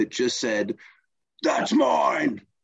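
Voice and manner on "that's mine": demonic voice pitched very high. Retelling someone taking a spot they'd been waiting for, retelling a demonic voice. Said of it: "I heard this demonic voice come out of my body".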